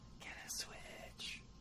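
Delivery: very quiet, hushed, breathy whisper, barely voiced. Showing how an earlier line was said: whispered. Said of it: "I was whispering. ... Like that".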